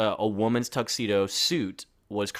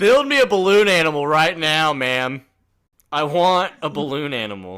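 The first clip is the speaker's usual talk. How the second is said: put-on high, loud, drawn-out, demanding kid yell; 5 semitones higher, 7 dB louder than usual. Acting out a kid demanding a balloon animal: imitating a yelling kid. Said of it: "Why are you yelling?".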